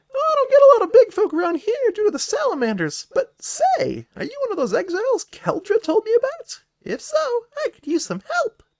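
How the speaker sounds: squeaky little sprite voice, very high and loud. Voicing a tiny winged tea-sipping character greeting big visitors, tiny character voice. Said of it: "That's my best tiny voice".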